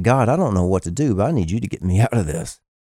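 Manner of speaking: put-on muttering under the breath. Retelling a prayer said while everyone prayed aloud: imitating muttering under breath. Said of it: "under my breath".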